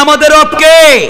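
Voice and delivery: high, loud voice calling out to carry far.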